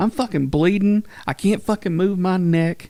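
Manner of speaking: furious, ranting angry outburst. Retelling a friend's reaction to being hit with a guitar: imitating someone ranting angrily. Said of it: "He's just going clean off".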